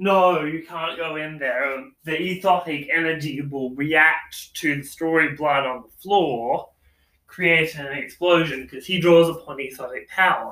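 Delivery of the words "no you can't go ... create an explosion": usual speaking voice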